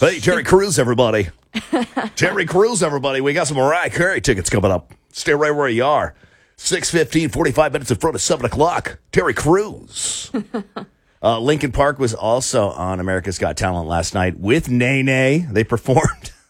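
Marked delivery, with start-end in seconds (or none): 0.0-10.3 put-on old-school radio announcer voice, pitched up, 90s patter. Riffing on how a name sounds, launching into a 90s radio guy voice. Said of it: "Sounds like some radio guy from the 90s".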